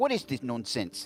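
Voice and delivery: put-on, laid-on London Cockney accent. Showing the others an accent attempt: cockney accent. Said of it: "a Cockney accent".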